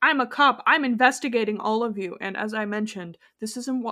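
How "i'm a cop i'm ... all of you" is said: ordinary talk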